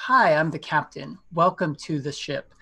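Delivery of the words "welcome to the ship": normal talking voice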